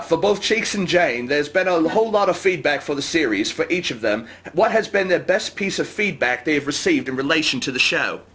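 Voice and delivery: put-on New Zealand accent. Reading a chat question aloud after being asked: new zealand accent. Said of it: "You have to do this one in a New Zealand accent".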